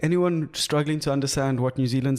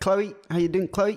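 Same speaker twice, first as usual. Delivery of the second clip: clipped put-on New Zealand accent; 6 semitones higher than usual. Greeting Chloe on a podcast in a put-on New Zealand accent. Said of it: "I just love the way they New Zealanders speak".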